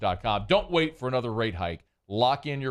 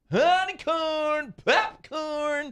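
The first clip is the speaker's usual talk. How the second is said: put-on accented street-vendor call, much higher. Recalling a vendor they and their brother copied for years, imitating a vendor's accented call. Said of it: "like we would imitate for years".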